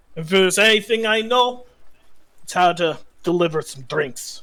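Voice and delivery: put-on folksy hill dwarf voice. Voicing the dwarf applying for a bartending position, introducing himself: [name]'s hill dwarf voice. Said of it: "He is a hill dwarf, / He is a stout red-headed dwarf with a passion for ingestible poisons. / He pays you no mind as he puts an application on the table".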